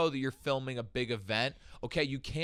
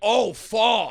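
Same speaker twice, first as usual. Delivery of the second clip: put-on Brooklyn voice, higher and louder; 8 semitones higher, 10 dB louder than usual. Imitating how someone from brooklyn would react: imitating a brooklyn local. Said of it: "someone from Brooklyn would be like".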